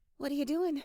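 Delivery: nervously laughing, a little scared. Reading a story aloud, a woman asks what the narrator is doing: a little scared, nervous laughter. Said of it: "She sounds a little scared".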